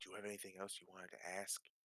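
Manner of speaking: quiet, low, hushed half-whisper. Playing a character who nudges another character and asks a question: half-whispering. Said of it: "just kind of whisper".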